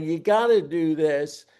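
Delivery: urgent, earnest, begging, insistent pleading tone. Retelling asking companies to join a voluntary market: imitating own pleading. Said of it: "I'm pleading, I'm begging".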